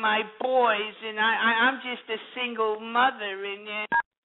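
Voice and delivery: slow, mocking, complaining lament voice.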